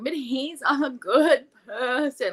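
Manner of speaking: mock very slow, high, tearful, crying plea. Retelling how a woman pleaded while crying: imitating someone crying. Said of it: "sitting there crying".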